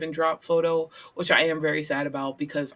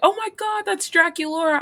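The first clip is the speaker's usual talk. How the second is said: put-on thrilled squeaky cry, very high and raised; 13 semitones higher, 6 dB louder than usual. Retelling spotting cosplayers at a convention: imitating herself screaming excitedly. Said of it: "I kept screaming at people".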